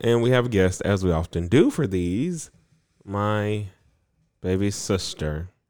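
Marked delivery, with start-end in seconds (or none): 3.1-5.5 sounding reluctant. Introducing a guest on the show, reluctant tone. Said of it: "He said it like he was reluctant to speak about it".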